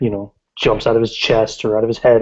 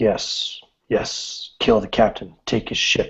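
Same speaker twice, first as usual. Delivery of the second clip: man's voice, quieter; 4 dB quieter than usual. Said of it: "in a man's voice".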